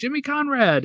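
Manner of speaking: very high-pitched, shouted yell. Recalling spotting someone while leaving the stands after a final, retelling a yell. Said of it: "I just yelled".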